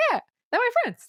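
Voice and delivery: very high, relentlessly positive, acted-out cheerful delivery. Retelling a movie scene, imitating the hero's line: happy, positive delivery. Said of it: "every time he delivers a line, he's so happy and positive".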